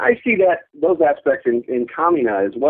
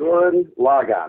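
first syllables stressed in "gurren lagann". Explaining how they were told to say the title: first-syllable stress on gurren lagann. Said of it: "So you emphasize the first syllable on each word".

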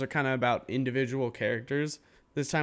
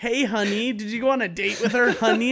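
shrill, very high-pitched, loud put-on voice; 10 semitones higher, 7 dB louder than usual. Mocking an annoying character by imitating Miki. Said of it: "Miki still annoys the shit out of me".

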